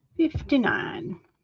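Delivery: slight Southern-sounding accent. Drawing a card and repeating its number, very Southern-sounding. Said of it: "That came out very southern sounding".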